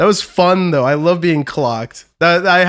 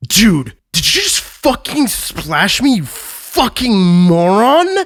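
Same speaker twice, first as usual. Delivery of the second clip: put-on belligerent drunk voice, slow and angry; 3 semitones higher than usual. Retelling how a drunk stranger turned around and confronted him: imitating a drunk angry guy. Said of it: "Drunk as fuck, turns around to me and goes".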